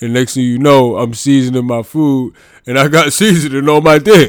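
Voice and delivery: put-on deep gravelly voice. Retelling what the brother said on the phone: imitating brother's deep gravelly voice. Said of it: "I'm gonna do an impression of him".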